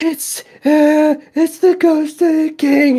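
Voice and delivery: very high, panicked, stumbling stammer. In a tabletop game, the GM voices Lyrafin seeing the king's ghost: freaking out. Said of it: "She's freaking out".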